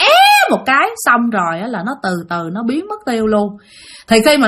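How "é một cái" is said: piercing high shriek. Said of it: "nó la lên một cái".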